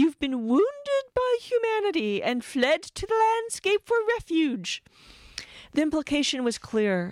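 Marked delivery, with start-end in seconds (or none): 0.0-4.8 put-on very high, trilling, fluting, plummy posh English accent. Narrator quoting a woman interviewing him on stage: plummy, fluting accent. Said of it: "a woman with a plummy, fluting accent".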